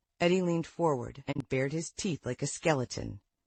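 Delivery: ordinary delivery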